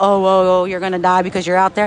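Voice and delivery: ordinary talk, nothing marked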